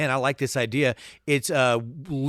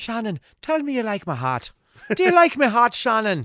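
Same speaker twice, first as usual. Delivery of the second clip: bad, sing-song, swooping Irish brogue; 8 semitones higher than usual. Quoting a scene from Far and Away, doing Tom Cruise's terrible Irish accent. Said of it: "He's got a terrible Irish accent".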